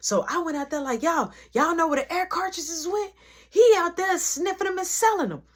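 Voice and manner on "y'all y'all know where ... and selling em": loud, high, raised voice. Retelling calling out to the store after deciding to get loud back: retelling getting loud. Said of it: "get loud right back with you".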